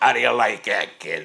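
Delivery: very loud, booming nightclub boss voice. Retelling the owner introducing him in the kitchen: imitating Jules Podell. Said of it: "goes like this".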